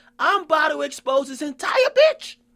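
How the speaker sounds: high-pitched, called-out shout. Retelling what an alleged ghostwriter shouted out: imitating someone shouting. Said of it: "he shouts out".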